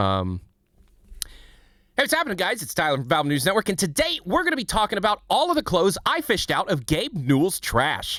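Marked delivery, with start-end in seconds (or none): 1.2-8.2 animated, pitched-up video-host intro voice. Doing an impression after being asked for one: Tyler from Valve News Network impression. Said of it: "Do a V N N impression".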